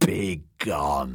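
whispered croak, croaky and rough. An old woman in a story answers the visiting girls, in a croaking whisper. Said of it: "she told the girls in a croaking whisper".

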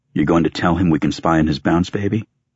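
ordinary delivery

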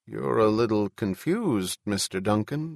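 usual speaking voice

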